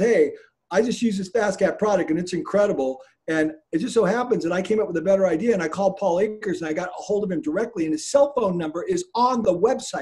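normal talking voice

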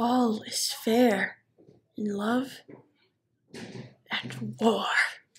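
very slow, soft, menacing villain murmur.

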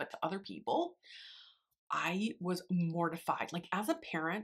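soft whisper.

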